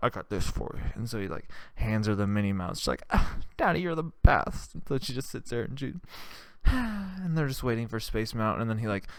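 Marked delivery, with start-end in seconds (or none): 3.6-4.7 put-on high-pitched voice of a small girl. Retelling a story about a dad handing his daughter a toy: little girl voice. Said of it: "I practiced the girl before".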